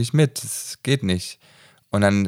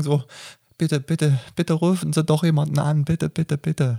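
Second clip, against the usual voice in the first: mock full-on begging, high and pleading; 6 semitones higher than usual. Retelling how a man who had been yelling suddenly begged a woman, mock pleading. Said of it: "in den Flehen-Modus gegangen".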